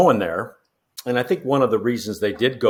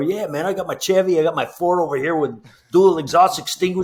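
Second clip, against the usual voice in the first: put-on Mexican accent, voice pitched up; 7 semitones higher than usual. Retelling a friend's Lee Trevino impression on the fairway: Lee Trevino impression. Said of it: "the Mexican accent as he's walking down the fairway, imitating Lee Trevino".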